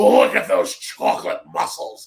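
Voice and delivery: rough, creaky, raspy, gushing, fawning seventies-style voice. Imitating Vince talking about Booker T: imitating Vince. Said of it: "Vince talking about Booker T".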